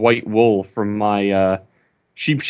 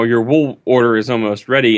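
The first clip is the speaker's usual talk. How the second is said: ordinary talk, nothing marked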